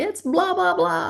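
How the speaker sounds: mock shrill, very high radio-style yelling, screaming babble. Retelling again how Bill screamed into the radio: imitating someone screaming. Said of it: "is just screaming into the radio".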